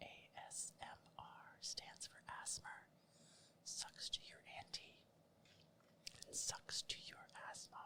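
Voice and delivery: hushed whispering voice. Spoofing ASMR and inviting everyone to whisper along, whispering. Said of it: "Let's all just whisper together".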